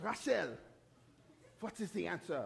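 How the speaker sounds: put-on French accent. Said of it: "I'm gonna try to do a French accent".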